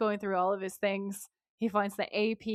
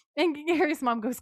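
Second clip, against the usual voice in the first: usual speaking voice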